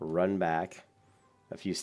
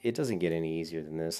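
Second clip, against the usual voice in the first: ordinary talk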